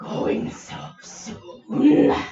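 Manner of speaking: rough, deep, guttural rumbling dragon voice. Narrator voices a dragon calling to the woods, deep guttural dragon voice. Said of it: "deep and guttural".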